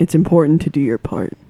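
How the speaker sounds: gentle, kindly voice. Playing a game character walking up to a younger character, said very kindly. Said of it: "I'm like saying that like very in like very kindly".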